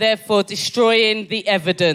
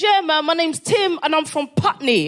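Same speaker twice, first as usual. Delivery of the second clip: put-on British accent, pitched much higher; 8 semitones higher than usual. Retelling what a man said to him, imitating Tim's British accent. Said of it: "in a British accent".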